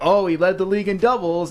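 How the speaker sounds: dry, scoffing, mocking sarcastic tone. Speaker reenacting their own earlier remark about a player, done sarcastically. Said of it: "It was sarcastically like".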